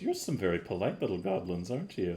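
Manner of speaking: light laugh running through the words, swooping lilt. Voicing a lady who speaks to two polite goblins: chuckling while speaking. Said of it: "She chuckles a little bit and goes".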